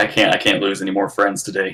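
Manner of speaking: usual speaking voice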